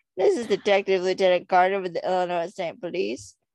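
loud, high, exaggerated good old boy accent. Speaker quotes a detective's introduction to show how his accent sounds, good old boy accent. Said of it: "it kind of sounds like a good old boy accent".

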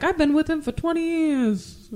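put-on Brooklyn accent. Quoting a character from a movie, the speaker does a Brooklyn accent impression. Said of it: "In that accent".

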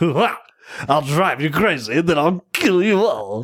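high horror clown voice. Quoting the clown character from a movie scene: Tim Curry voice. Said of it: "he totally sounds like Tim Curry".

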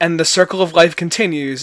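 ordinary talk

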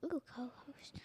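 soft, unvoiced whispered ooh.

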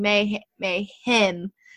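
mayhem with hard, heavy stress on second syllable hem. Recalling catching oneself saying mayhem oddly, with heavy stress on second syllable hem. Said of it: "I was like putting so much emphasis on the him".

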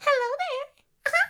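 high cartoon mouse voice. Answering a request to do a voice: Minnie Mouse voice. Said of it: "can you please do Minnie Mouse's voice?".

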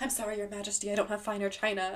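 put-on nervous speech. Retelling a movie scene where a character serves the queen: imitating nervous speech. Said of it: "she's so nervous".

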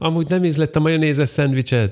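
high, yelled shout. Speaker recalls someone running past them shouting, retelling a shout. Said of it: "azt kiabálta".

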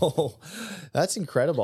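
words spilling out with laughter. Reacting to what the other speaker just said, laughing while talking. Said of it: "excuse me for laughing".

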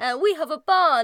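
put-on, bad British accent. Playing one of the nothing worms, bad British accent. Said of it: "I have a bad British accent".

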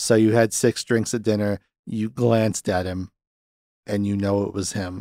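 mock dry, expressionless monotone, low and soft. Describing a film's questioning scene, imitating Hoffman's deadpan delivery. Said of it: "delivering it in this deadpan, monotone, dry version".

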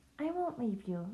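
hushed, soft, barely breathed half-whisper. Lily speaks to Ranger, her face buried in his neck, half-whispered. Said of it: "Lily whispered".

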